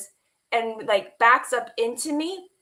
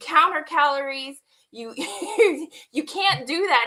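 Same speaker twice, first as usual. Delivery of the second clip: mock urgent, heated, insistent delivery; 4 semitones higher than usual. Retelling a fight with him over food: retelling own yelling. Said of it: "I started yelling at him".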